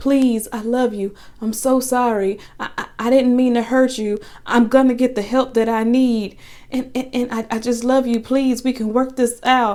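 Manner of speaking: desperate, begging, stammering, words tripping over each other. Retelling how he apologized and begged her to take him back: imitating someone pleading. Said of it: "he's apologizing and he's pleading with her".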